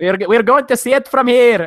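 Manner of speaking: loud, amateur attempted Irish accent. A podcast host tries out an accent just before the show's intro: attempted Irish accent. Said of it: "Is that is that what Irish is?".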